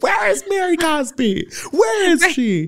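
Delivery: put-on, very high-pitched, shrill, searching scream. Retelling how Whitney searched the house for Mary: imitating Whitney screaming.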